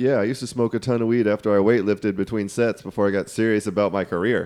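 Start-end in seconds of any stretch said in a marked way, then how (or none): none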